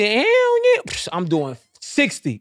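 eager, boastful, fan-like enthusiastic voice.

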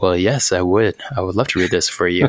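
smoothest put-on radio voice. Imagining a first-time guest agreeing to read, in a smooth Cool Jazz radio voice. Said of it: "That's my best radio voice".

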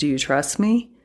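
ordinary talk

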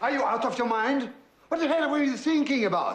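very high-pitched, shrill, loud yelling. A father confronting his daughter over what she told a stranger; yelling. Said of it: "You're yelling".

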